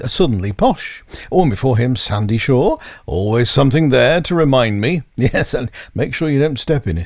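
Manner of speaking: normal talking voice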